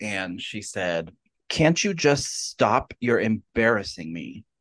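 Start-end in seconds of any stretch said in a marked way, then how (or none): 1.5-4.4 put-on very upset, scolding tone. Retelling a mother scolding her crying child in line: imitating an upset mother. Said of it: "the mom was getting very, very upset with her".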